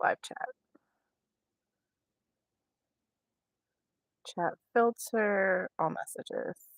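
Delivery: speech broken by hiccups between words. Setting up a live chat between hiccups: talking with hiccups. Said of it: "Sorry for hiccuping".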